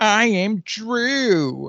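put-on very high childish voice, "Drew" drawn out. Imitating the voice an actor uses for a character: childish Adam Sandler voice. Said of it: "the childish voice that Adam Sandler sometimes does".

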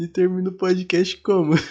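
talking mid-laugh, words mixed with laughter. Podcast speaker asking a question, laughing while talking. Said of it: "eu tô peixe chorando".

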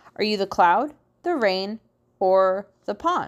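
ordinary delivery

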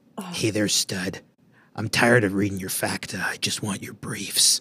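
leering, creepy put-on creep voice. Asked to do a put-on voice for a line: creepy pervert voice. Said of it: "can you do like a creepy pervert voice? I'm very good at doing this kind of voice".

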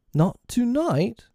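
very high, baffled, bewildered tone. Reading a story aloud, the lost boys ask this question, bewildered.

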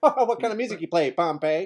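loud, mocking, teasing bully taunt. Joining in, acting out a bully uncle teasing Pompeii: imitating a bully uncle. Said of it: "he's like".

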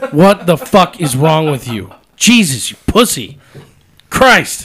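very loud, high-pitched, furious angry yelling. Ranting at a lineman the speaker finds maddening to watch: angry outburst. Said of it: "he makes me so mad to watch play".

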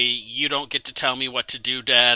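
ordinary talk

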